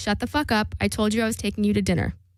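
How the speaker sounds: imitated whisper. Retelling what a man said while grabbing the speaker: imitating a whisper. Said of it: "whispers in my ear".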